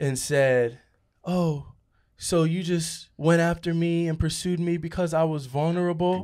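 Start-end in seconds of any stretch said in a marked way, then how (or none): 1.2-6.2 put-on tearful crying voice, higher. Retelling what an ex said on the phone: imitating a crying ex. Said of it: "This one girl called me crying".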